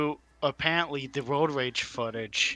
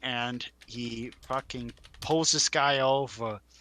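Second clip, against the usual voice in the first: normal talking voice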